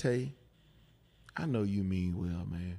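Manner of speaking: put-on slow talking. Retelling what he said when he sat the speaker down: imitating someone talking slowly. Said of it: "and he talked slow, like his daddy talked".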